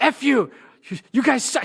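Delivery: acted, sudden, mean, high, loud scream. Telling about a mean girl who screamed crazy things, imitating someone screaming. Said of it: "she would just be screaming like".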